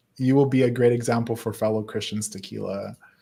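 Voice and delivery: ordinary talk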